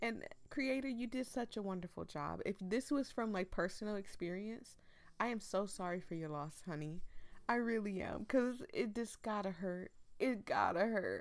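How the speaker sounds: on the verge of tears, tearful voice. Reacting to a creator's post about losing a pet, tearing up while reading. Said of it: "I'm tearing up reading this".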